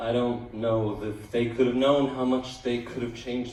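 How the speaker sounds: ordinary talk, nothing marked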